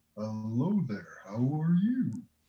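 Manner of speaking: very slow, methodical voice, each word drawn out. Voicing the myconoid as it speaks telepathically to everyone, very slow, methodical voice. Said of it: "this kind of very slow, methodical voice emanates".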